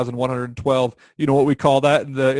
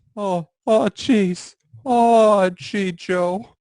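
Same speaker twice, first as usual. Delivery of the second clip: put-on high-pitched cartoon teen character voice; 7 semitones higher than usual. Standing in front of the camera during a recording, doing the Morty voice. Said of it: "why are you doing the Morty voice?".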